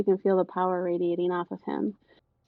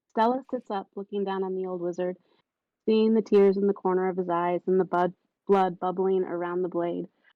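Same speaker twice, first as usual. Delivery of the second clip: usual speaking voice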